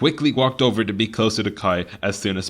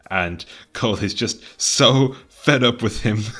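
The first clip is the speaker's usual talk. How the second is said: usual speaking voice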